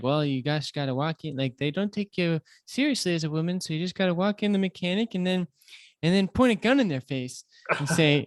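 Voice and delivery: put-on horrible Minnesota housewife accent. Acting out a Minnesota housewife character giving advice, horrible Minnesota accent. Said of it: "that was a horrible Minnesota accent".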